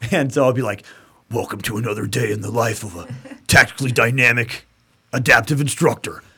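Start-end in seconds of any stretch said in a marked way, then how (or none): 1.3-6.2 put-on instructor voice, intense. Recalling past jokes, the speaker does his best intense Pat McNamara voice. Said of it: "my best Pat McNamara voice because he's super fucking intense".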